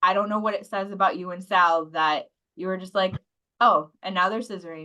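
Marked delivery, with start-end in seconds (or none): 3.6-4.9 put-on flat, deadpan delivery. Retelling another speaker's earlier remark: imitating a deadpan delivery. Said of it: "just so deadpan".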